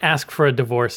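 usual speaking voice

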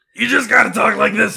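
gravelly, creaky impression voice.

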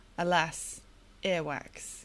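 play-acted, completely deadpan, low and flat. Quoting a favourite line from the book to a co-host, completely deadpan. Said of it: "just completely sort of deadpan".

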